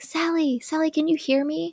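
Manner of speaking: hushed whisper. Retelling a movie scene, calling for sally: whispering a character's call. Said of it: "a whispered voice".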